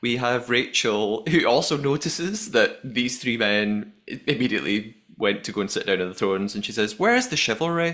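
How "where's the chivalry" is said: put-on Northern Irish accent, very high pitch. Recounting mission highlights and quoting Rachel's remark, in a Northern Irish accent. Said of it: "this is my Northern Irish accent".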